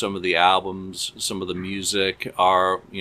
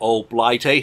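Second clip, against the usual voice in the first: loud, bad, barely British put-on accent; 3 semitones higher, 5 dB louder than usual. Podcast guest being introduced by the host: bad British accent. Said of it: "That wasn't a very British accent".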